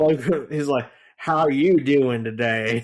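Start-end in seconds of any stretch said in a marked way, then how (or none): 1.2-2.8 loud put-on New Orleans Louisiana accent. Describing a Louisiana investigator character, imitating his Louisiana accent. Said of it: "he tries to do the accent".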